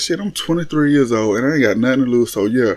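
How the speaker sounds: plain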